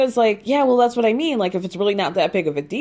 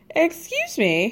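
ordinary talk

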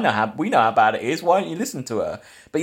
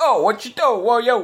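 put-on Italian-American accented speech; 10 semitones higher than usual. Mocking a film's general as a cop show cliche: imitating Italian-American cop show cliche. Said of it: "this weird Italian-American, like, cop show cliche character".

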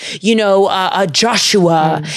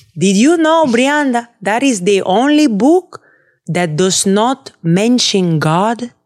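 put-on Dominican accent; 2 semitones higher than usual. Speaking to brianda, in a put-on accent. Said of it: "What accent is that?".

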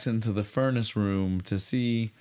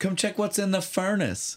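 put-on high-pitched calling out yell; 9 semitones higher than usual. Telling a story, the speaker quotes a woman yelling from another room, retelling a yell. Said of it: "Adele yells to Claudia".

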